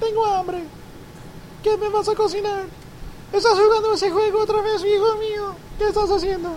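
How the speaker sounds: very high Spanish grandmother voice. Imitating a grandmother heard in the background of a call, impression of his grandmother. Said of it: "that's my impersonation of um, his grandmother".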